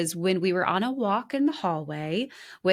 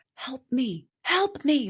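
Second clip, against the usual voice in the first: put-on pleading whisper, higher; 5 semitones higher than usual. Retelling a husband's plea on the way to therapy: imitating a whisper. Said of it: "he would whisper".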